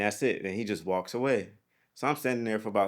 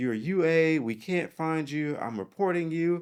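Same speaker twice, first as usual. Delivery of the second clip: put-on yelling, high and drawn-out; 8 semitones higher than usual. Retelling how a superior yelled at him on his first day: imitating someone yelling. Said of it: "he's yelling at me".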